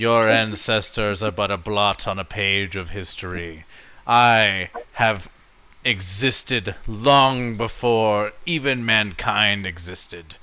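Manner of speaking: loud voice of an ancient evil. Voicing the ancient deity answering a mortal's challenge: ancient evil voice. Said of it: "the ancient evil voice laughs slowly".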